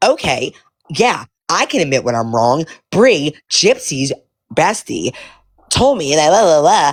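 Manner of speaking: put-on stuck-up, condescending, snobby, dismissive tone. Retelling how another woman admits she was wrong: imitating her snobby tone. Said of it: "she was so snobby about it".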